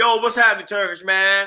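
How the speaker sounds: put-on New York accent. Speaker imagines greeting friends back home, talking like a New Yorker. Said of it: "talking like a New Yorker".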